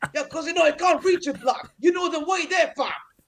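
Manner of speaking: very high-pitched, squeaky caricature voice. Doing an impression of Troops for the host: Troops impression. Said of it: "everybody got a Troops impression".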